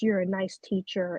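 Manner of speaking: ordinary talk, nothing marked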